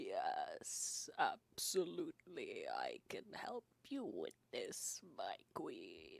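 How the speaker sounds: ugly, very deep, rasping, creaky put-on voice. Game master approximating an overheard speaker: really awful voice. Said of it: "this really awful voice".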